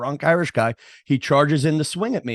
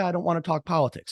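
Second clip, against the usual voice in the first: play-acted courteous, polite, mild tone; 3 semitones higher, 5 dB quieter than usual. Recounting a reply to a guy who yelled out, retelling a polite reply. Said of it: "And I just said politely".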